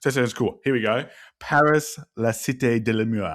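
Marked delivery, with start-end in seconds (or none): 1.4-3.4 slow, best-attempt put-on French accent. Reading out a board game's French title: put-on French accent. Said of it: "that was my best impression of that".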